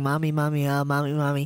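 put-on quiet mumble. Mimicking Rexy mumbling under her breath: imitating Rexy mumbling quietly. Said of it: "but very quietly because she doesn't want me to hear her".

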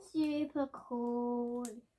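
very quiet, dead-level, flat, zero enthusiasm. Answering what she thinks of her advent gift: flat, unexcited. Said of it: "don't sound too excited".

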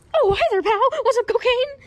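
very high-pitched, loud, shrill voice. Voicing a character answering through a microphone: Mickey Mouse voice. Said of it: "Mickey Mouse, are you there?".

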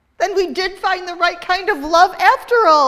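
high, joyful crying out. A narrator reads Vivian answering the goddess; crying out joyfully. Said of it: "Vivian cried joyfully".

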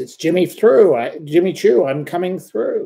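mock, high, loud top-of-the-lungs scream. Retelling a man coming through to get his coat back: imitating Jimmy Choo screaming. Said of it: "he screamed at the top of his voice".

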